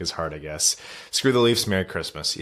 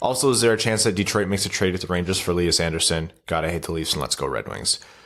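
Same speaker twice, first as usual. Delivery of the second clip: usual speaking voice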